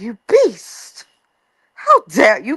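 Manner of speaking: grand, stagey theatrical declamation with swooping pitch. Retelling a reality show retort: imitating a shakespearean retort. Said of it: "We would have thought we was watching Shakespeare".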